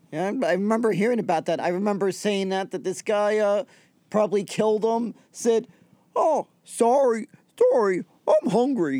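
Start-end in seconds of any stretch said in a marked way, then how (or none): 6.1-9.0 put-on Canadian accent, very drawn out, slow, sing-song. Retelling a killing on a Greyhound bus, voicing the man's words in an attempted Canadian accent. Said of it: "me just trying to imitate a Canadian accent".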